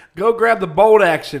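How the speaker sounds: very loud, drawn-out, put-on Southern dad accent. Imitating a dad who owned many guns: imitating a dad in a southern accent. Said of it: "I don't even know why I'm talking like that".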